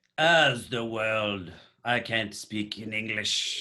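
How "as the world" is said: amateur attempt at a British accent. Trying the bit as an Englishman would, attempted British accent. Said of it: "is that is that British?".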